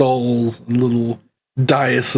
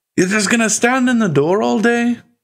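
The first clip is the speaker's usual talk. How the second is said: very high dwarf voice, swelling and growing louder; 11 semitones higher than usual. Voicing a dwarf who stands up in a magic shop: dwarf voice getting louder. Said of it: "his voice gets louder".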